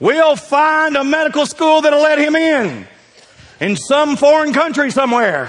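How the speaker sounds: high, loud, proud believing mama voice.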